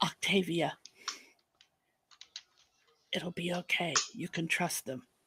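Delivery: very quiet, barely audible whisper. A player's character comes up softly behind a nervous twin, whispering. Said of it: "I will whisper".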